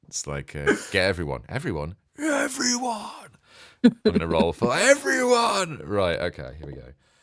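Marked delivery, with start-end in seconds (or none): 0.9-3.2 put-on shouting villain voice, higher. Redoing the Gary Oldman moment from Leon while rolling dice: Gary Oldman in Leon impression. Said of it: "I wanted to go full Gary Oldman in Le-, in, in Leon then".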